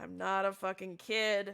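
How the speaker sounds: soft, drawn-out, annoyed, exasperated tone. Voicing a character who was just called kid, eye-rolling retort. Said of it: "he's gonna roll his eyes at you and go".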